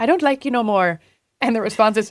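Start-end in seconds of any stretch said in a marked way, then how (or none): 0.0-1.0 put-on Irish accent, film-style delivery. Imitating a TikTok soundbite from a movie: Irish accent. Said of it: "it's an Irish accent".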